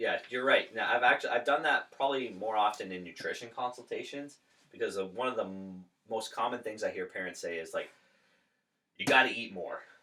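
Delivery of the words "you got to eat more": loud, raised yelling voice. Retelling what parents say to their kid in nutrition consultations: imitating a parent yelling. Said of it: "literally yelling at their kid".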